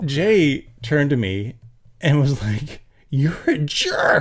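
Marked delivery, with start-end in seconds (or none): 3.1-4.2 accusing mock loud voice, kept small and quiet. Retelling how a friend yelled at the driver: imitating a really loud voice. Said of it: "like, really loud".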